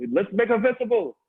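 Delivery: put-on heavy Indonesian accent, very high-pitched. Teasing a board member's husband by imitating his thick Indonesian accent. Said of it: "pretend and do my".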